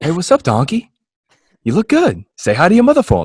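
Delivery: high, swooping, friendly, pal-like chatter. Imitating Mark Wahlberg from an SNL sketch talking to animals: Mark Wahlberg talking to animals. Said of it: "Mark Wahlberg talks to animals".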